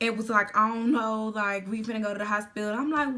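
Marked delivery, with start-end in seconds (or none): 0.6-2.7 put-on teary, play-crying, fake sobbing through words. Retelling a phone call about a shooting: imitating someone fake crying. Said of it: "legit play crying".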